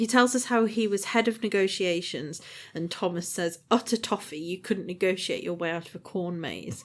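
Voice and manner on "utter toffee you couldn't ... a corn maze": normal talking voice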